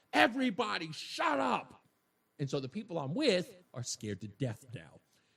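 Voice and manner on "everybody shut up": high, loud screaming. Retelling a bartender jumping on the bar: imitating a woman screaming. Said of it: "screams at the person running through that".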